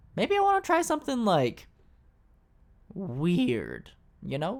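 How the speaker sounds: voice breaking a little. Speaker talks to his viewers, with a little voice crack. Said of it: "Get a little voice crack there".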